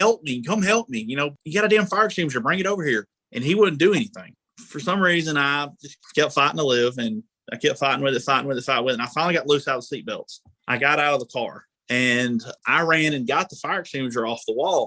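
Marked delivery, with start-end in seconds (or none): 0.0-3.1 frantic, urgent, desperate voice. Retelling a car fire, trapped inside: imitating someone screaming for help. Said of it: "and I'm screaming".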